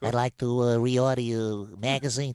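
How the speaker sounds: put-on American gangster accent. Retelling their own phone call made in a put-on American accent: Tony Soprano impression. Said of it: "bunged on a bit of I was doing it's like Tony Soprano".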